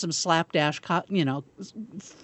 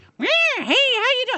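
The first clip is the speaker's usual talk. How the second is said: very high, loud, horrible put-on clown voice; 5 dB louder than usual. Imitating how a clown greets people, in a horrible clown voice. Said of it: "they're going to do a clown voice".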